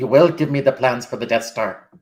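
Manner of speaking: Scottish-sounding voice. Retrying the line after the first attempt sounded Irish, Scottish accent. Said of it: "some Scottish dude saying".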